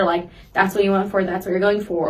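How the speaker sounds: ordinary delivery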